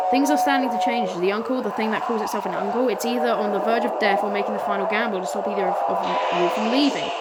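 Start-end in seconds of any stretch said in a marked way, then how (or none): none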